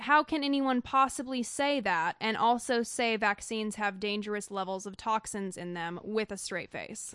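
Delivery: normal talking voice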